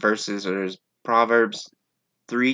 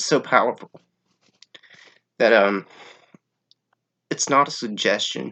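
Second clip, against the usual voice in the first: voice choking up, catching with emotion. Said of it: "I'm kind of choking up".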